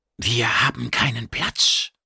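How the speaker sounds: hissing, sibilant creature voice. A narrator reads a creature's line, refusing room, in hissing creature voice. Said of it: "Es sprach ein zischelndes".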